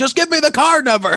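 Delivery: very high, shrill, loud, enraged screaming. Retelling how scammers yell at the pretend old person: imitating a scammer screaming. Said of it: "screaming at what would be the old person".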